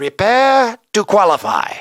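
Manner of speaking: put-on Japanese accent, martial-arts-master voice. Speaker narrating an arcade racing game, slipping into a Mister Miyagi voice. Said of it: "I sounded like Mister Miyagi there".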